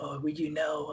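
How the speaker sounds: very hushed, quiet, subtle and understated delivery. Describing a guy from the Mandalorian, the speaker imitates his subtle voice. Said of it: "a guy that had the subtle voice".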